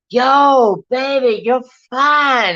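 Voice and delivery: loud, very slow hollered yell, yo stretched. Retelling how a friend called to a woman across the street: imitating a friend yelling. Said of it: "yelling at her across the street".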